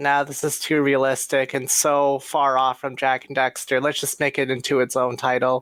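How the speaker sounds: plain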